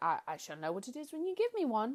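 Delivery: put-on British accent with swooping, swinging pitch. Retelling a movie scene, quoting Peter Pan: British-accented Peter Pan impression. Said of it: "he's not British".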